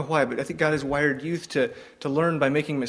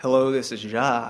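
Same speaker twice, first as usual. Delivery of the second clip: put-on, long, drawn-out Texas drawl; 2 semitones lower than usual. Retelling the first phone call with a new member, Jacques answers, Jacques's long Texas drawl. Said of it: "This really long Texas drawl".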